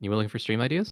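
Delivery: whispered voice. Whispering a pitch into another speaker's ear: whispering. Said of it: "I don't know if the mic can pick up my whisper".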